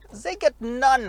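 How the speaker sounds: awful, very bad put-on German accent. Reviewing a small city car for viewers, very bad German accent. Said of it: "you got my very worst German accent there".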